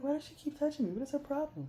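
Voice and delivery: very high-pitched cat voice. Voicing the cat Kit Kat while the niece touches him: Kit Kat voice. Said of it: "He's like".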